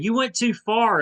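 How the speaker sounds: high, loud griping, complaining tone.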